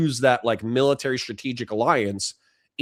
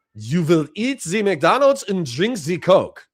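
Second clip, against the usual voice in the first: clumsy put-on German accent, high and loud; 6 semitones higher, 5 dB louder than usual. Discussing Putin and the Western world, the speaker slips into a bad German accent. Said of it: "I need somebody to write out the German accent for me".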